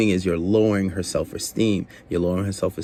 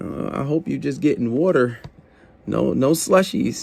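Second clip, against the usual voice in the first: playful, laughing, joking tease, pitched up; 6 semitones higher than usual. Showing how to tease a woman about her order: playful laughing tease. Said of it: "say it in a laughing manner".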